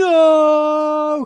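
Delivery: high loud Hollywood shout.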